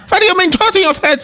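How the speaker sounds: put-on German-sounding accent. Retelling an Italian man's reply in a story, German-sounding accent. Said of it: "I'm talking like a German".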